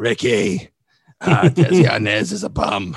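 very slow comedienne voice, every word drawn out. Doing an impression of Lucy's interview: Lucy after cigarettes impression. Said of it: "My Lucy after cigarettes is like".

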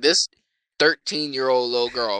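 normal talking voice

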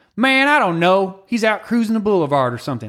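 put-on Southern Alabama accent. Imitating the speaker's stepdad from Alabama, in his Alabama accent. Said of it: "he sounds like this when he talks".

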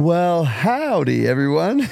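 high-pitched put-on Texan accent. Greeting everyone at the start: put-on texan manner. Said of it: "That was very Texan of you".

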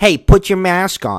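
put-on very high, loud yell. Retelling a man at the gym yelling at him from across the room: retelling a yell across the gym. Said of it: "He yells across the gym".

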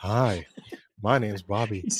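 slow, lingering, creepy creeper voice. Introducing himself as Bobby, in a creepy voice. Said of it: "Don't use that voice because you sound like a creeper".

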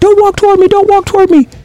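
very high-pitched, loud screaming voice. Recounting a police shooting, re-enacting the officer screaming. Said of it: "he's like screaming".

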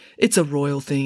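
plain reading voice

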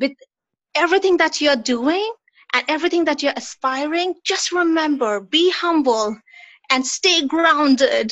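motherly, exasperated, lecturing voice. Retelling something a mother often said: imitating mother, exasperated. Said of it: "it was my mother's voice".

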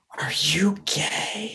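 hushed, secretive whisper. Retelling being asked a question in secret: imitating a whisper. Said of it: "whispered it, like a secret".

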